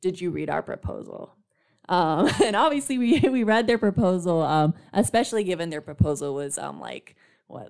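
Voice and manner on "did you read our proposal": put-on condescending tone. Recounting a bargaining session, imitating Rob's condescension in his reply. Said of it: "very condescendingly responded".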